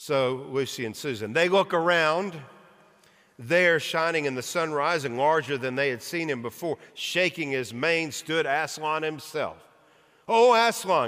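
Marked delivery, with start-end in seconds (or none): 10.3-11.1 high, loud cry, half afraid, half glad. Narrating, two children cry out, staring up at him: crying out, frightened yet glad. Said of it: "cried both the children".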